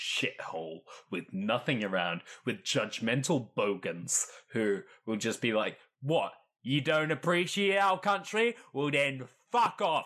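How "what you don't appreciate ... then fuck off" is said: put-on, pitched-up Cockney-ish accent with Australian slipping in. Speaker mimics judgmental bogans talking back, in a put-on Cockney accent. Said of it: "That's a great Cockney accent".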